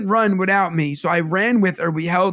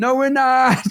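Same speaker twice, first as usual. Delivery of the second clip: imitated child yelling, higher; 6 semitones higher than usual. Retelling a daughter talking back to the coach: imitating a child yelling. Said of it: "She's just yelling at the coach".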